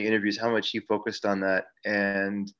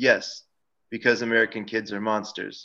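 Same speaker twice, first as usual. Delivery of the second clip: dry, flat put-on deadpan delivery. Retelling an interview answer about monsters in the kids: dry Hitchcock impression. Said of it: "very dry".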